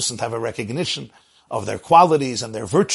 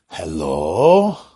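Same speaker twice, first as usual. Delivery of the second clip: groggy, sleepy, just-woken, drawn-out delivery; 7 semitones lower, 4 dB louder than usual. Retelling how a rabbi answered the phone, woken from sleep: imitating a sleepy hello. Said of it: "it was mimicking".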